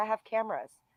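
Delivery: put-on French accent. Retelling what the man at the door said: imitating a french accent. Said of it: "he's French accent".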